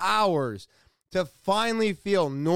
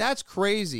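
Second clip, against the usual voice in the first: usual speaking voice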